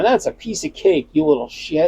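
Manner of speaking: play-acted laughing delivery. Imagining grandparents answering a worry, imitating grandparents laughing. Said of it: "my grandparents would be laughing at all of this and going".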